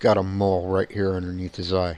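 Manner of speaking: usual speaking voice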